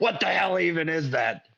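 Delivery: imitated old man voice. Retelling a viral video, quoting the old man in the yard: imitating an old man. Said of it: "And the old man goes".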